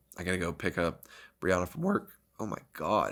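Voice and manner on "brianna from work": voice breaking and cracking mid-line. Podcast host wrapping up the episode, voice cracking. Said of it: "Do you hear that voice crack?".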